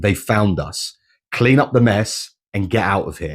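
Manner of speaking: plain reading voice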